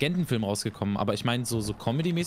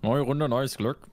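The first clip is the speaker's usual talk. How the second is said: attempted frog voice. After a game round, asked to say it in a frog voice. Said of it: "Sag mal ganz kurz in Froschstimme".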